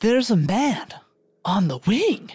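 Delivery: drawn-out, big pitch swings. Taking a turn after the other speaker: William Shatner impression. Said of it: "and then I'll do my best".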